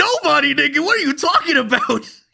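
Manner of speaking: very high, squeaky, cartoon-style anime voice. Retelling a manga scene where Luffy answers a boast: Luffy voice. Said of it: "he's like".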